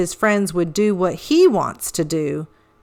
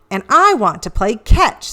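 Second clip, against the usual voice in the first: plain reading voice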